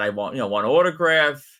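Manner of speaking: ordinary delivery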